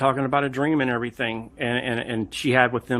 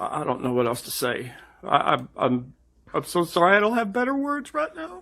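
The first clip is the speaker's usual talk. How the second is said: put-on crying voice, high, swooping fake sobs; 5 semitones higher than usual. Apologizing and saying he has no better words: fake crying. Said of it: "This fake crying is the worst".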